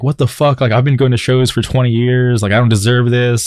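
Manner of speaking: contained high mild yell. Retelling a fight at a show, imitating someone screaming.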